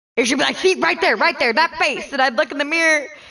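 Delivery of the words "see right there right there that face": furious, angry yelling rant, acted out. Retelling how mom yelled while pointing at the mirror: imitating mom yelling. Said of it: "fucking yelling at me, going off on me".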